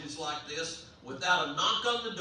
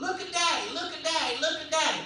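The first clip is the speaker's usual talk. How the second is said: put-on very high little-boy yell. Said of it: "he started yelling".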